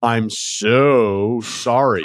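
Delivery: heavy sarcasm with long, drawn-out "so". A usually quiet person retelling a sarcastic comeback, acting out past sarcasm. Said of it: "summoned the most sarcastic voice I could muster".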